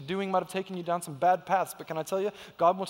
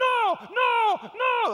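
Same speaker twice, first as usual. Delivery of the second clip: put-on very high, shrill, loud little-girl tantrum; 5 dB louder than usual. Speaker acting out a little girl who finally got upset: imitating an upset little girl. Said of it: "she finally got all upset".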